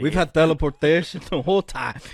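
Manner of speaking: put-on Spanish accent. Speaker talking to a listener, suddenly in a Spanish accent. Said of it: "Why did you just Spanish accent?".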